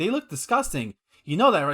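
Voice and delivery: ordinary talk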